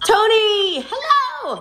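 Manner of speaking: high voice cracking on hello. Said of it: "Oh, my voice just cracked".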